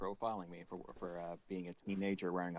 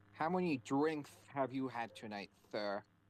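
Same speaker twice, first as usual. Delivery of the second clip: put-on heavy lisp; 6 semitones higher than usual. Retelling being pulled over by a cop in high school: imitating a cop's heavy lisp. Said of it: "cop with a super he-, heavy lisp".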